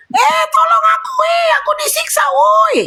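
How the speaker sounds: play-acted very high, slow, drawn-out scream. Imagining how the victim cried out: imitating a victim screaming for help. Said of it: "Kayak gitu".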